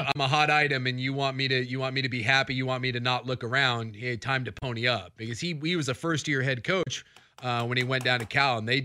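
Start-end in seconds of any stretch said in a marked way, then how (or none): none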